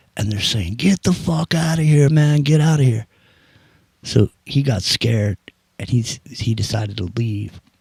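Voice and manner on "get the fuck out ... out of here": hollered, high-pitched yell, all aggression. Retelling how people in kayaks yelled at a sailor: imitating people yelling. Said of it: "they're yelling at him and waving machetes".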